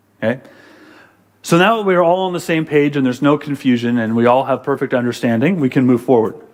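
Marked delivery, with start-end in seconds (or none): none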